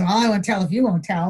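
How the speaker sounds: usual speaking voice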